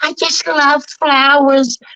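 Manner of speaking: very cartoonish, high-pitched voice. Recalling doing all the Smurfs at school, now doing Smurfette: Smurfette voice. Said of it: "So I was doing uh Smurfette".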